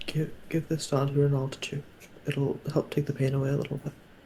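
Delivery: very quiet, hushed whispered aside. Whispering in character to another character, passing over bark: whispering in character. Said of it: "I'm just gonna whisper".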